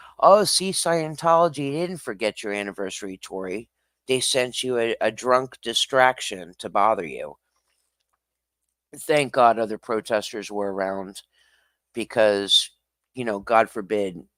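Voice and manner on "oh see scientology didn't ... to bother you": ordinary talk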